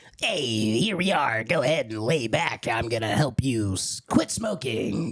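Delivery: put-on low-pitched, old-time radio DJ voice. Showing the voice they were working on earlier: Wolfman Jack impression. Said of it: "working on my Wolfman Jack".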